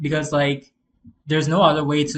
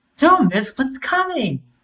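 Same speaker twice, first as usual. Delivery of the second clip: very high, fake female promo announcer voice; 10 semitones higher, 4 dB louder than usual. Mocking the lady's line from a trailer: her fake-sounding voice. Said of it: "I hate this fucking lady's voice when she's like".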